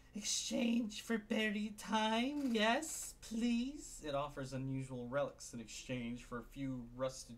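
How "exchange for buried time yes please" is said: very high-pitched, throaty wheezing voice. Narrator voices a cloaked figure offering relics for sale: wheezing, throaty, high-pitched voice. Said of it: "its voice throaty and high-pitched".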